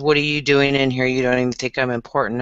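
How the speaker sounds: plain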